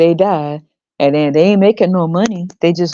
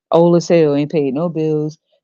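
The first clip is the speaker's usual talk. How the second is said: usual speaking voice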